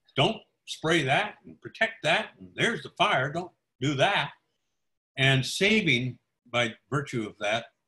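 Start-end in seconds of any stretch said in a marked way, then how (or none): 0.2-4.4 put-on firm, bossy, commanding, direct tone. Speaker retells a woman ordering firemen during a fire: retelling loud bossy orders. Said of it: "bossy, direct orders in a loud voice".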